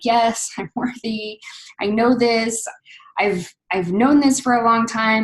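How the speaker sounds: acted teary voice, welling up, speaking through tears. Retelling a moment of hearing one is worthy: retelling own teary reaction. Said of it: "you get all teary-eyed and start crying".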